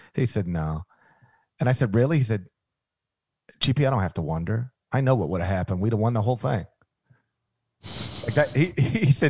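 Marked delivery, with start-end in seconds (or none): 3.6-6.7 low, fast, flat, unmoved monotone. Retelling his answer to your question about Kenyon's broken leg, in his Bob Huggins monotone voice. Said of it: "in his Bob Huggins monotone voice".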